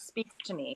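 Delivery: soft, unvoiced whisper, spoken aside to oneself.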